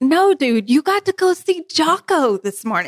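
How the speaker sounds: hyped-up, enthusiastic, excited, high and drawn out. Showing how the news should sound: excited retelling. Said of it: "You gotta say it more exciting than that".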